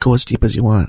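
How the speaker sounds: put-on whisper. Retelling words whispered in one's ear: imitating a whisper. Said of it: "She's whispering in my ear".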